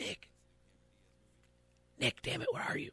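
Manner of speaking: soft, hushed, whispered calling out. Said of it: "She calls out quietly".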